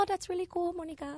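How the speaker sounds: very high, soft put-on mother voice. A guest describes her mom's reaction to her spirit readings; imitating her mom's voice. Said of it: "I like your mom voice".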